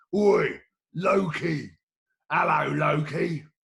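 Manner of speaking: big, loud, booming giant voice. Narrator reading a myth, the giant calling up to Loki in Thrym's big giant voice. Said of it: "he called out in his big giant voice".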